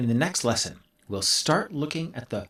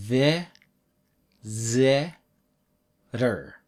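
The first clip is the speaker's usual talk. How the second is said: each v, z, r sound very drawn out. Teaching English pronunciation, sounding out the parts of a word very slowly. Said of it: "Very slowly".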